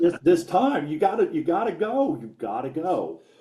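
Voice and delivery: mock, put-on yelling. Retelling a late match moment, imitating yelling at the screen. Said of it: "I was yelling at the screen".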